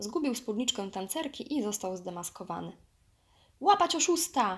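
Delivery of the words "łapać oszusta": high, loud shouted cry. Narrator reads the monkeys' cry after Baloo is unmasked, yelling. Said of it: "wrzasnęły małpy".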